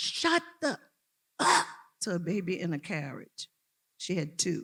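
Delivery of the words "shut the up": mock very high, shrill screeching yell. Retelling a girl screaming at a baby in a carriage: imitating a girl screaming. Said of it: "This girl was screaming".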